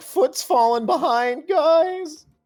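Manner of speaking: very high cartoon voice, pitch up, drawn-out guys. Voicing a seven foot tall stoner character like Shaggy: Shaggy impression. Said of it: "I just did a Shaggy impression".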